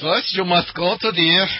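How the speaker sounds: put-on heavy German accent. Imagining a film character's lines, the speaker puts on a very heavy german accent. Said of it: "speaking with a very heavy German accent".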